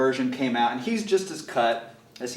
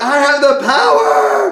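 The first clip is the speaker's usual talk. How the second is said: very high, loud laughing scream. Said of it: "and so I screamed it".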